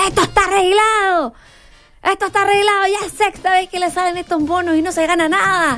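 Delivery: mock-angry quarreling. Retelling how a companion fought with casino staff, mock-angry quarreling. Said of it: "se peleaba con la gente del casino".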